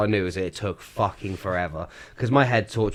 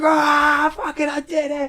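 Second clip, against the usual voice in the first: put-on very high, loud, drawn-out scream; 5 dB louder than usual. Retelling reaching the finish gate: retelling own screaming. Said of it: "just screaming my head off".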